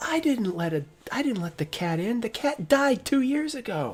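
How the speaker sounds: male shouting. The narrator voices a man heard yelling as the player flees down the hallway. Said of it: "you hear the guy yell".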